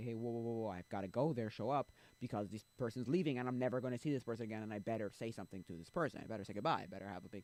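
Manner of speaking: normal talking voice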